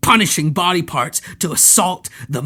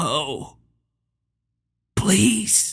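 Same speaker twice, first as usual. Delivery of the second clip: frightened, terrified voice cracking and breaking apart; 2 semitones higher, 3 dB quieter than usual. A narrator reads a tearful man's plea, in a terrified, cracking voice. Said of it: "he spoke in a terrified, cracking voice".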